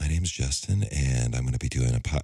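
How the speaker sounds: low public-radio announcer delivery. Recalling his first podcast episode, the speaker mimics his old NPR voice. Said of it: "almost like an NPR voice".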